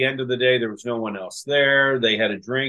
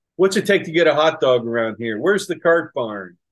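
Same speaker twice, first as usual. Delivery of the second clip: put-on New Jersey accent; 2 semitones higher than usual. Imitating people who sound like they're from new jersey, put-on new jersey accent. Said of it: "they sound like they were from New Jersey".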